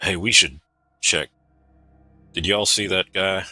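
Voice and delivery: understated, discreet, low-key aside. Speaking in character to companions about a watching stranger: speaking quietly. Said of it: "Revan will quietly say".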